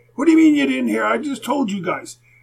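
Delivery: loud high-pitched shouting. Retelling the coach scolding a player: imitating a coach yelling. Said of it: "yell at me in front of".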